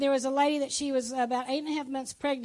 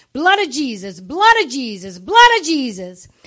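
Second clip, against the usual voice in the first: booming, very loud, swooping yell, repeated; 14 dB louder than usual. Retelling a twelve-year-old yelling while a car spins: imitating someone yelling. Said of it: "but she's yelling".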